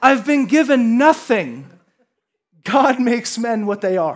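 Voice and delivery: put-on spoken with Scottish accent. Repeating the same quote a second time, now in a Scottish accent. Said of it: "should I go Scottish accent".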